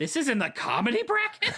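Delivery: very high, swooping shouted yell. Retelling how a wife reacted after the movie ended: imitating wife yelling. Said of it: "she just yelled".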